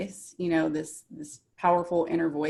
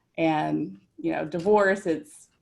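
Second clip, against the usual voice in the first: normal talking voice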